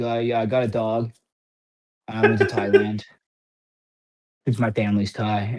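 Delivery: level, low, droning monotone with no lift. Answering a question about the offseason during training camp, imitating Kyler sounding so flat. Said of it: "he just sounded so flat".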